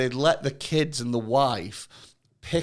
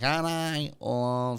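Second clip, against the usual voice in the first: put-on Manchester accent; 6 dB quieter than usual. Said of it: "That was a Manc accent if I've ever heard one".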